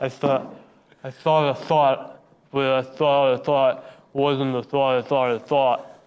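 low, tongue-tied mumble with mangled words. Reading a tongue twister card in a Sylvester Stallone voice. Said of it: "so I picked up Sylvester Stallone".

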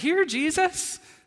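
high, slow, generous open-handed tone. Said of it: "it's this open-handed".

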